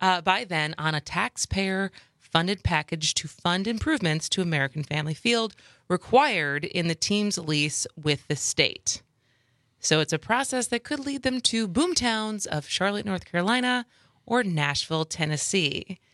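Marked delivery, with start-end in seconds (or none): none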